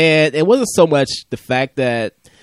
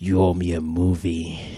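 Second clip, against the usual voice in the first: low, deep, slow, drawn-out angry voice; 6 semitones lower, 5 dB quieter than usual. Imitating another speaker's angry line like Clint Eastwood: imitating a Clint Eastwood voice. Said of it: "Like a Clint".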